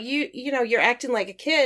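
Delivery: ordinary talk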